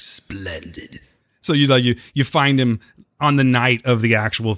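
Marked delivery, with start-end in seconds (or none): 0.0-1.0 put-on breathy whisper, almost no voice. Acting out Palpatine accepting the doctor's offer: put-on Palpatine voice. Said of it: "And he's like".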